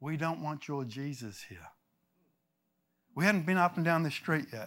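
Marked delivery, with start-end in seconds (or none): none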